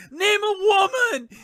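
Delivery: very loud, very high, shrill, booming yelling. Retelling a street bit where he yells at a woman: imitating someone yelling. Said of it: "he's yelling at her".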